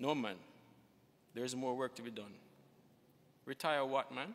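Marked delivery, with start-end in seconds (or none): none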